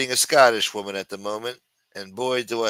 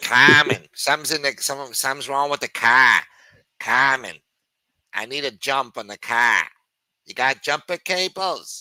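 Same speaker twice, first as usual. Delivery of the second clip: put-on Boston accent throughout; 4 semitones higher, 4 dB louder than usual. Speaker running through city accents, asked to do Boston; imitating a Boston accent. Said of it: "That's Boston".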